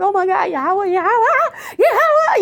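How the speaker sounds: frightened tone. Recalling a relative driving you toward trucks, acting out your scared panic. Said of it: "I was so freaking scared".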